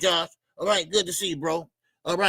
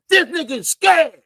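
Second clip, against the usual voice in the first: very high, very loud, shrill put-on voice; 10 semitones higher, 9 dB louder than usual. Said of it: "In my [name] voice".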